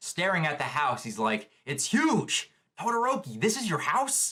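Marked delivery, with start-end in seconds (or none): 1.6-4.3 put-on, very high, awestruck amazed wonder. Describing a scene where Deku stares at a house, imitating awestruck Deku. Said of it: "Deku is just awestruck".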